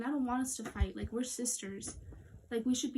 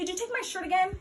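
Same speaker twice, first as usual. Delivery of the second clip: full-on loud, high-pitched yell; 9 semitones higher, 7 dB louder than usual. In an acted scene, calling through the door to the other person, loudly. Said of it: "Why are you being so loud?".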